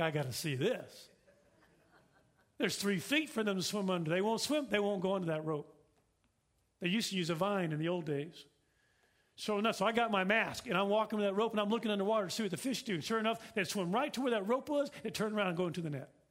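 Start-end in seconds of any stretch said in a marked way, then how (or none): 0.0-1.1 low, slow, skeptical and doubting delivery. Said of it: "And I'm like".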